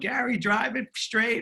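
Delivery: mock old woman voice, screaming, very high. Retelling a memory of a grandmother on a swan boat: imitating grandmother screaming. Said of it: "she was screaming at me".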